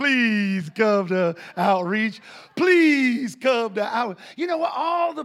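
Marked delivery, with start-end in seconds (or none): 0.0-4.2 slow, loud, drawn-out preacher-style pleading. Retelling Cherie's Facebook appeals for church outreach: Jimmy Swaggart-style pleading. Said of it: "she was all Jimmy swaggering it".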